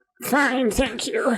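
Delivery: high-pitched, slow, drawn-out, uneasy voice.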